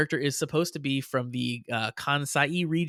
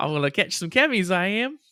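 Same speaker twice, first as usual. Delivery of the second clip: put-on high Texan-style Southern accent; 5 semitones higher than usual. Joining in quoting the character's Southern-style speech: Renge in a Southern accent. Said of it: "transliterated as having a Southern or Texan accent".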